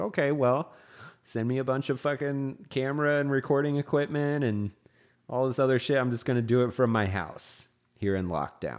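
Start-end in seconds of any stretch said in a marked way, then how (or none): none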